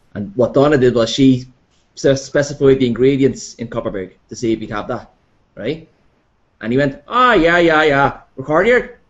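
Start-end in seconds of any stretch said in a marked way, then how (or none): 7.1-8.9 put-on Newry accent. Retelling what a Newry barman said back: imitating a Newry accent. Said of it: "answered me in his stupid Newry accent".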